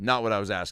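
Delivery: ordinary talk, nothing marked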